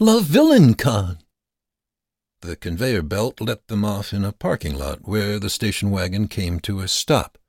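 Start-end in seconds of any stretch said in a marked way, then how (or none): 0.0-1.2 high, thrilled, excited cry. Arriving at a villain convention with his friends, crying with excitement. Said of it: "Stuart cried with excitement".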